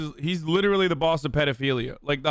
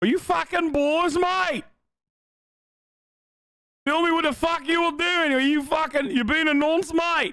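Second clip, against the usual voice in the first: put-on Australian accent, very high pitch; 12 semitones higher than usual. Mocking another speaker's accent: mock Australian accent. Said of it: "I'm sorry to the Aussies".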